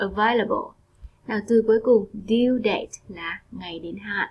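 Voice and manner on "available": available, stress on second syllable vail. Teaching a four-syllable English word, stress on second syllable of available. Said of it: "con nhấn mạnh vào âm tiết số 2".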